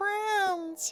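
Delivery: very high, pitch-shifted fairy sprite voice. Voicing floating will-o-wisps greeting a player: high pitch-shifted fairy voice. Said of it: "I cannot make this voice, so we're just going to take this and pitch shift it up".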